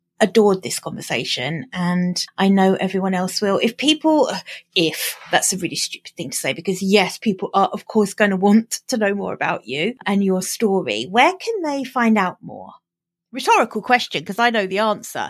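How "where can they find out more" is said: animated, smooth, polished professional podcaster tone. Asking a guest where people can find out more, in a professional podcaster tone. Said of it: "trying to sound like some kind of professional podcaster".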